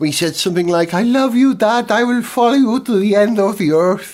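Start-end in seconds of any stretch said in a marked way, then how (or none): 0.9-4.1 put-on Mexican-accented English, pitched higher. Act out Felipe's son speaking to his dad on the radio, in a put-on Mexican accent. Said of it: "I don't know why he's got a Mexican accent".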